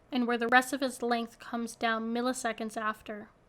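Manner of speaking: ordinary delivery, nothing marked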